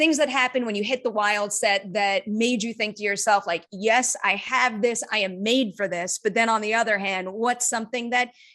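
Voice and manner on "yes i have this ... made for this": ordinary delivery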